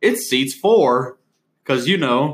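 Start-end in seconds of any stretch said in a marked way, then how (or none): 0.0-1.2 put-on folksy rural country accent. Retelling walking up to tell a joke, in the speaker's best imitation of a country accent. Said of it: "in my best imitation of a country accent".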